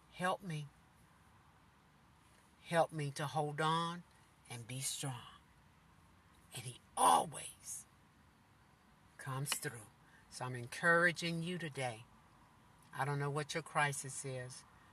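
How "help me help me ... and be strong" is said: whisper, lower and quieter. Retelling a prayer said to god when feeling heavy: imitating own whisper. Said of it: "I say in a whisper to God".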